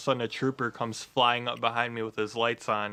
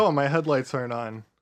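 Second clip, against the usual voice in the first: ordinary talk, nothing marked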